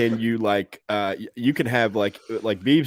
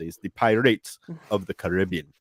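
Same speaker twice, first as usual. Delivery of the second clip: put-on Jamaican accent, done all the way; 3 semitones lower, 4 dB quieter than usual. Retelling a joke's punchline from a trip to Kingston: Jamaican accent. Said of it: "I did it with the accent and everything".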